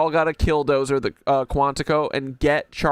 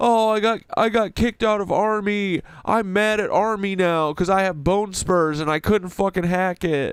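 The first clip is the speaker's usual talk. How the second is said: derisive, mocking army-guy caricature voice; 4 semitones higher than usual. Mocking an army guy who got kicked out: imitating an army guy. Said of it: "be like".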